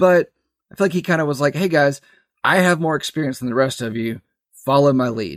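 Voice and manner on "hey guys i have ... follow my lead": ordinary talk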